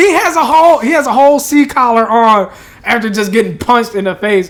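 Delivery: loud, high, outraged rant.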